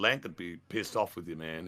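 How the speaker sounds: normal talking voice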